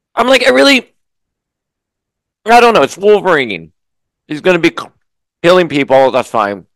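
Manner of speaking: talking with mouth full. Speaker keeps talking while eating a bagel, chewing while talking. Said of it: "You can hear me chewing because I'm having this delicious bagel".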